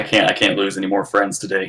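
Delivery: ordinary delivery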